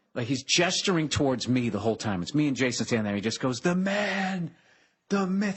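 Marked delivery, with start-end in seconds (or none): 3.6-5.5 very slow, high yell, stretching out "man". Retelling a greeting shouted across a parking lot: imitating someone shouting. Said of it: "He's shouting across the parking lot".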